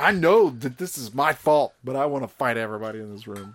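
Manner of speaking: normal talking voice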